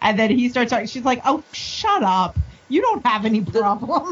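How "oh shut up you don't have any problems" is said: sassy, attitude-filled, tossed-off delivery. Imagining a support group scene, acting out Jessica dismissing Ward: sassy Jessica voice. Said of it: "the sass in that room".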